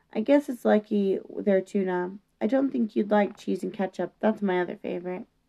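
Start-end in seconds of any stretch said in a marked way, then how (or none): none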